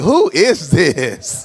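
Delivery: baffled, puzzled, honestly confused tone. Joking about people who pray in another voice, imitating God. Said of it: "God be like".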